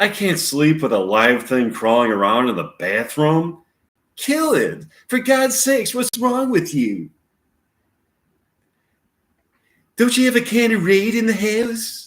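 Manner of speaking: high-pitched, heavy rural Southern drawl. Act out someone upset over a spider in the bathroom, Woody Allen crossed with Southern hick. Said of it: "sounds like Woody Allen crossed with like some Southern hick".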